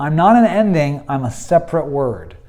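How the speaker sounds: ordinary delivery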